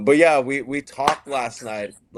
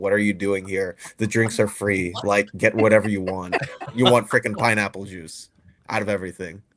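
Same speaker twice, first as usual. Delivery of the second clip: put-on disappointed voice; 2 semitones lower than usual. Retelling a bartender's reaction to a juice order: imitating a disappointed bartender. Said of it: "the bartender just looked at me super disappointed".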